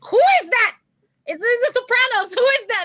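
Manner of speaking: mock anger, pitched very high. Retelling Fidel Kalala hearing the speaker's stick-out voice, imitating Fidel Kalala being mad. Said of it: "would be just so mad".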